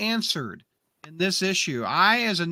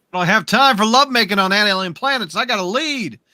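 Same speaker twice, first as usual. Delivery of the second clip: loud, belted, sassy dismissive delivery. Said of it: "He's like".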